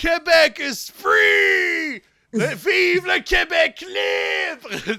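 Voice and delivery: very slow, high, drawn-out scream with swooping pitch. Acting out Quebec as a guitarist in an imagined band: screaming. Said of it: "Just screaming like that".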